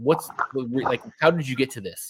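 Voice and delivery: ordinary delivery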